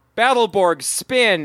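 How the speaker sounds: put-on commanding call, mild and kept contained. Retelling a show scene where a character orders a robot: imitating a shouted command. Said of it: "and then he shouts out".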